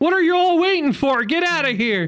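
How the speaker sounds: very high, screamed outburst. Retelling a scene where Hank yells at staring bellhops: imitating Hank screaming. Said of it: "just screams".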